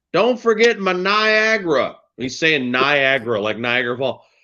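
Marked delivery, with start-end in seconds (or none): 0.1-1.9 shrill, very high, loud, drawn-out hollering. Retelling a man at the window yelling to the pharmacist, imitating a man screaming. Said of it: "he's screaming at the pharmacist".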